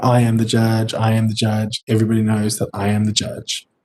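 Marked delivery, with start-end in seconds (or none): none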